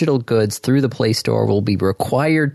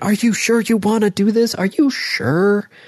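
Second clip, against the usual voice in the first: very high, drawn-out screaming; 11 semitones higher than usual. Retelling the phone's warnings while sideloading apps: imitating a phone screaming. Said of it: "my phone is basically screaming at me going".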